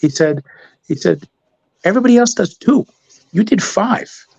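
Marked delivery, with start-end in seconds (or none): 1.8-4.1 put-on very high-pitched Bronx accent. Retelling what a boss said about doing too many audits, quote him in a bronx accent. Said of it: "a Brooklyn uh, Bronx accent or whatever".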